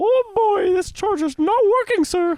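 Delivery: voice going way up high and loud. Speaker complains about a charger to the other speaker in a Mickey Mouse voice. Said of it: "if you're gonna do the voice".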